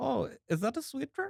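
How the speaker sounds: put-on German accent, pitched way up. Quoting a TikTok creator to a friend, imitating a German accent. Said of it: "a guy on TikTok who does like a German accent".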